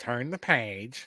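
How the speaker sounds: snide, snarky storybook-narrator voice. Describing the recording's reader: imitating a snarky reader. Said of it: "I found him kinda snarky".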